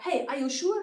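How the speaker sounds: hostile, pushy, aggressive and confrontational tone. Showing how a question can be asked in an aggressive tone. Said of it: "This can be very aggressive".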